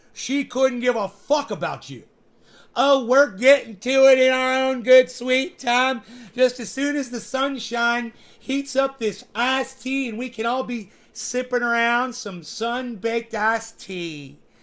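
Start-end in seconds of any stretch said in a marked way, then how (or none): 2.8-14.4 slow, drawn-out, unhurried, leisurely delivery. Mocking how slowly she talks: mocking imitation of slow talking. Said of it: "I love how slow she talks".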